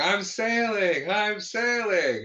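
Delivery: high, slow drawn-out scream. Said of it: "Bob is just screaming".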